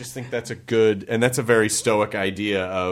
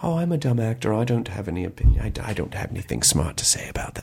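put-on light British accent, self-deprecating tone. Retelling what an actor said, imitating his quiet soft british voice. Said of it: "he just very quietly says".

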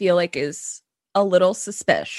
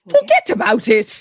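put-on British accent, pitched up; 5 semitones higher, 4 dB louder than usual. Chatting with another speaker, one tries how british people would say a phrase: british accent. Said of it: "I wonder how British people go".

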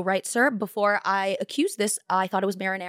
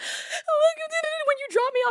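mock tearful sobbing, much higher pitched. Retelling crying to her mom in the car, imitating own sobbing. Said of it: "I'm just like sobbing".

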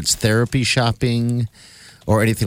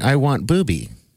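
put-on voice of a small child. Retelling what a little kid on a show kept saying: imitating a little kid. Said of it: "the little kid's running around going".

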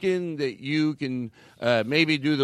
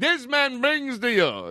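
fake Australian, high and swooping, R dropped from brings; 10 semitones higher than usual. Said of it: "Is that an Australian accent they dropped the R?".

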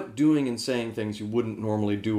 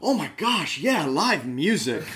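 high, gushing, over-eager excited voice; 6 semitones higher than usual. Retelling how he and Ben answered Cruz, imitating excited gushing. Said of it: "like excited meerkats".

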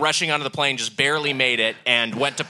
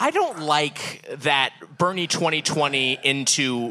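normal talking voice

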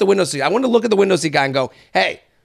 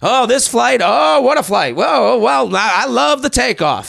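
mock chatty, gushing, enthusing mild half-shout; 4 semitones higher than usual. Retelling a plane passenger talking at this level: imitating someone yelling. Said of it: "he's talking at this level".

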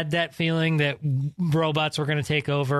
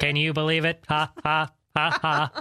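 mock laughing. Opening the broadcast with a joke impression: Hillary impression. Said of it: "my best Hillary impression".

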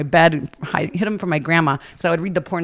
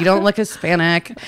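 plain

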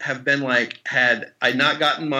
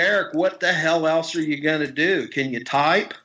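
put-on Oklahoma accent, easy, relaxed talk. Retelling a phone call with an actor friend from Oklahoma: Marshall Bell impression, Oklahoma accent. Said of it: "he's from Oklahoma, and he talks like this".

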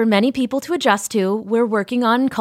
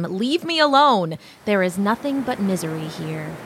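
usual speaking voice

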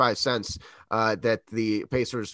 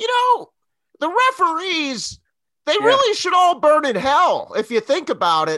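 mock whiny high voice, higher and louder; 8 dB louder than usual. Imitating a basketball commentator complaining about referees: imitating a high-pitched whine. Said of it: "high-pitched whine where he's like".

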